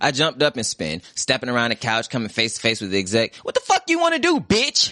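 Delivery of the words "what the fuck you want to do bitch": put-on, very high, shrill, sneering voice. Jumping up to face the exec, the narrator sneers back at him. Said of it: "I sneered".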